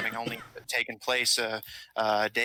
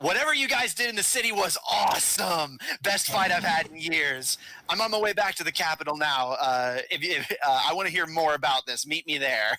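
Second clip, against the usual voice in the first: ear-ringing, loud, high-pitched shouting; 6 semitones higher than usual. Voicing the queen's loud reply message: yelling. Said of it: "as if she's likely yelling it".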